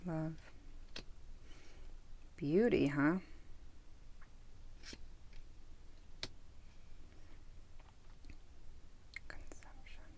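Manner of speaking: very quiet, murmured, inward whispered musing. Going over keywords, the speaker catches themself whispering to oneself. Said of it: "here I am whispering to myself".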